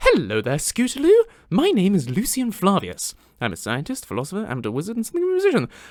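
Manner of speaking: animated character voice swooping up and down in pitch. The voice actor introduces the character to a guest named Scootaloo: Lucian voice. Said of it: "I sound slightly different to Lucian with my normal speaking voice".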